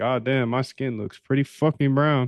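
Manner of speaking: usual speaking voice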